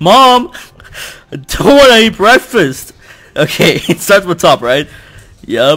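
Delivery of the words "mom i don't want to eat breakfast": put-on angry teenage boy voice, higher, louder. A streamer acts out what he becomes when angry: angry teenage boy impression. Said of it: "I become a teenage boy when I get angry".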